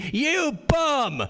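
shrill, very high, acted drunken heckling scream. Speaker imitates a baseball crowd heckling, imitating a drunk fan screaming. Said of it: "50,000 drunks screaming".

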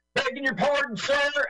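put-on very high-pitched American accent. Quoting a soldier's line from a film: imitating an american accent. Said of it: "that guy's American accent is excellent".

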